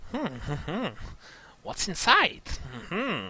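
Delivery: horrible high squeaky sing-song creature muttering. Narrating a creature approaching the listener's hiding place, muttering to itself: horrible squeaky muttering. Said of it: "muttering to itself with its horrible squeaky voice".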